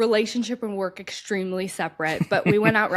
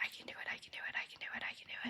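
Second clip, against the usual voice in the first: very quiet, embarrassed whisper. Retelling dropping in on a jump, repeating a phrase: imitating own whisper. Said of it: "I was whispering it".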